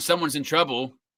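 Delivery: ordinary talk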